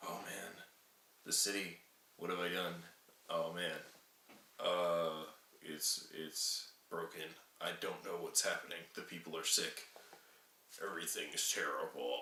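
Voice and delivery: very quiet, subdued, hushed everyday voice. Correcting a wrong accent, showing his real voice by imitating him. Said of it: "His voice is more like".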